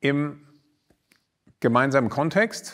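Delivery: gemeinsamen Kontext stressed high and loud with pauses. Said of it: "und ich betone".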